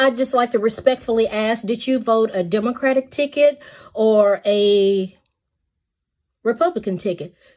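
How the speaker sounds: ordinary talk, nothing marked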